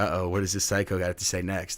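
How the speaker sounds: plain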